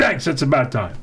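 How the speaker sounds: plain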